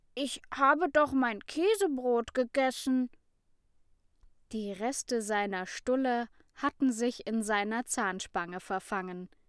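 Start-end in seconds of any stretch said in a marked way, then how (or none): 0.2-3.1 stammering in a defensive tone. A boy answers an accusation and defends himself, defensive stammer. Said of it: "verteidigte er sich stotternd".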